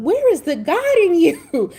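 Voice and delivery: high, loud, slow, incredulous disbelief.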